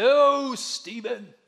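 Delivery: loud, booming pronouncement. Imagining God calling the speaker's name from the sky, in God's voice. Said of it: "which is how God would sound".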